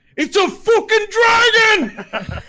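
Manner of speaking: dwarf voice shouting, very high, very slow. Voicing a dwarf who spots a dragon flying in: dwarf yelling. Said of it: "one of them yells out".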